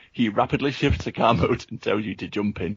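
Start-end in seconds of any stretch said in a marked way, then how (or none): none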